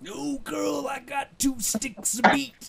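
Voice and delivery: very slow, stretched-out wrestling promo voice, pitched very high. Asking someone on a date by cutting a promo: Macho Man voice. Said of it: "Just break into the Macho Man voice".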